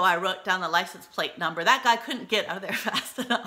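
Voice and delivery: ordinary talk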